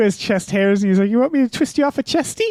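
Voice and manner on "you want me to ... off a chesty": cartoonish put-on New Zealand accent, pitched up. Quoting a New Zealand character from Bob's Burgers: imitating a New Zealand accent. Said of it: "Bob's Burgers has a New Zealand character".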